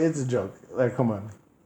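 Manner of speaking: plain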